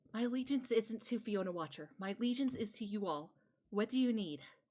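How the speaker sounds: hushed half-whisper with no voice behind it. Voicing Adelaide as she nods and answers the group, half-whispering. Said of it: "she's just going to whisper".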